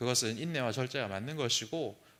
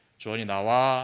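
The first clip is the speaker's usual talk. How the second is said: put-on stern, mock-solemn voice, louder; 3 semitones lower, 7 dB louder than usual. Parent retelling how mom calls the child out of a seat; retelling mom's stern call. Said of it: "좀 근엄한 소리로".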